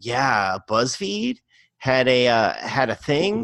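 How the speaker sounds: ordinary talk, nothing marked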